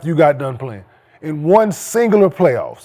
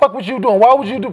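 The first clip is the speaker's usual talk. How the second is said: mock yell, higher; 5 semitones higher than usual. Describing rewatching basketball games, acting out yelling at the TV. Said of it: "You yelling at the TV".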